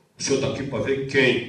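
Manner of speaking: very loud, gruff, booming, deepened officer voice, mouth full. Retelling how a man who grabbed his passport questioned him, deepened, mouth-full voice. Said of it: "engrossou a voz, encheu a boca e falou assim".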